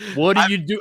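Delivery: put-on yelling. Retelling yelling at the TV screen during a football game: retelling own yelling at the TV. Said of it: "just yelling at the T V screen".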